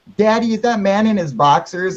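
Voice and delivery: put-on child's voice, yelling. Retelling what a neighbor kid said to the dad: imitating a kid yelling. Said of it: "And she's yelling".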